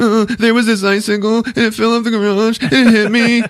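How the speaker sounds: very high blubbering, whimpering fake sobs. Retelling the story as Ralphie tells his mom what happened, imitating Ralphie fake crying. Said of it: "he's fucking fake crying".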